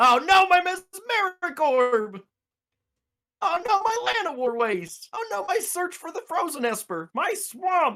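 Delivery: high, froggy, puppet-like frog voice. Taking a turn during a card game and speaking: Kermit the Frog voice. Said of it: "you turned into Kermit as you went there".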